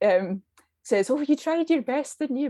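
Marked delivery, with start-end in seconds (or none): 1.1-2.5 put-on sarcastic Scottish granny voice, higher pitch. Describing a game that mocks losing players: imitating a sarcastic scottish gran. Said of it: "sarcastic Scottish gran".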